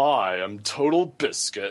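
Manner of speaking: slow, showman's announcer delivery. Retelling a player introduction where he takes off his glasses: Total Biscuit accent. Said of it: "in his accent".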